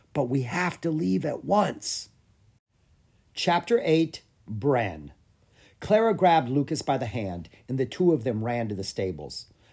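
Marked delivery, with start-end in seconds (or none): 0.1-2.1 hushed whisper. A girl answers a tearful boy who asked about her idea: whispered. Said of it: "she whispered".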